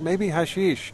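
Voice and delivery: high-pitched shout. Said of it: "he shouts back".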